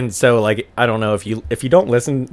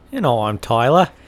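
put-on old-fashioned British accent. Introducing himself at the top of the show, in an old-timey British accent. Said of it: "mine went really Australian".

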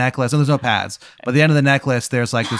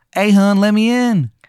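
very bad Maryland accent, drawn out, high, loud; 8 semitones higher, 5 dB louder than usual. A voice calls from outside a door to the listener; worst Maryland accent. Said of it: "the worst Maryland accent you've ever heard".

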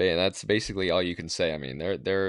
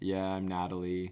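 soft, quiet, dead-level, uninflected monotone; 6 dB quieter than usual. Comparing the co-host to a podcaster's assistant, doing a Natalie monotone impression. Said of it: "talks very monotone".

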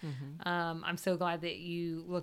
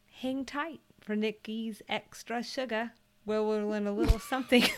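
sounding slightly British; 5 semitones higher, 5 dB louder than usual. Host closing the episode and teasing Nikki's Extra Sugar, sounding slightly British. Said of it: "Why'd you sound British?".

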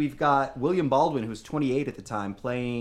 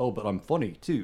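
poor, failed put-on Australian accent; 3 semitones lower than usual. Imitating an actor who shows he is funny too: Chris Hemsworth impression. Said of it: "That was not an Australian accent".

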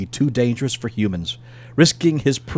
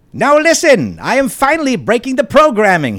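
high, loud, whining cartoon villain voice. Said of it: "he said in a whining voice reminiscent of Skeletor".

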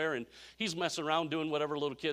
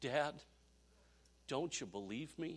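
mock-tearful, quieter, slower; 10 dB quieter than usual. Retelling a TV scene where the son pleads with his dad; retelling Opie's tearful plea. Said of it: "with tears in his".

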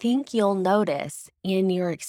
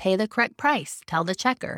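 usual speaking voice

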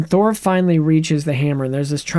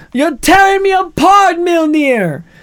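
very high, loud, shrill belted cry; 13 semitones higher, 6 dB louder than usual. Retelling a scene as Thor, doing Tommy Wiseau: Tommy Wiseau impression. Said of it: "He does Tommy Wiseau from The Room".

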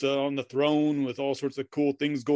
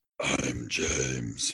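very low possessed demon voice. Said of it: "I'm not gonna do the, yeah, possessed voice".

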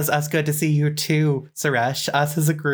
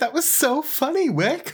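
shrill, loud, very high, over-the-top fake laugh; 11 semitones higher than usual. Playing Marina, who is trying hard with Wick, loud fake laugh. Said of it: "laugh really loudly and be like".

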